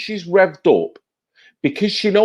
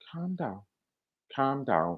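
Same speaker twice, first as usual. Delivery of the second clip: very soft, hushed, patronizing, condescending tone. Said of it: "All he has to do is go".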